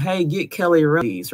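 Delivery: mild, light yelled call. Retelling how he called out of the room: imitating someone yelling. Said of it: "he yells out of the room".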